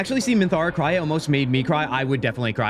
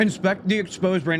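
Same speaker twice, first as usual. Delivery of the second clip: speaking with mouth full, much higher pitch; 5 semitones higher than usual. Streamer reading a game option aloud while eating a donut, talking while chewing. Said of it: "I'm chewing".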